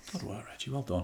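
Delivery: soft, hushed half-whisper under the breath. On a podcast, praising someone who is asleep, half-whispering. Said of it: "I'll whisper just in case he hears me".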